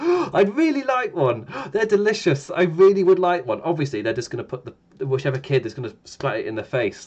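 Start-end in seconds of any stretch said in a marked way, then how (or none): 0.0-3.6 put-on genuinely keen, hopeful, eager, pitched-up kid's voice. Retelling a younger brother's reaction when offered a pie: imitating a kid's genuine eager excitement. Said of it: "the most genuine reaction of".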